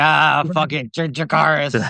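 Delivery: put-on slow, sloshed, drunk voice. Imitating a character showing up on his dragon: imitating a drunk Ulf. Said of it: "him showing up shit-faced".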